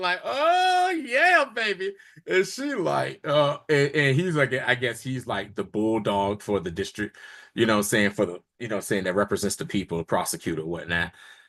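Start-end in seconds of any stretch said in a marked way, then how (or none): 0.2-1.9 excited whoop, much higher in pitch. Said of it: "Matt got excited".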